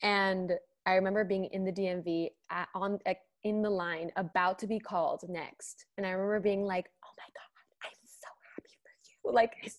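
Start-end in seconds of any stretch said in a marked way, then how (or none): 7.0-9.3 very quiet, hushed, breathy whisper. Retelling reading good news while waiting in line: retelling a whisper.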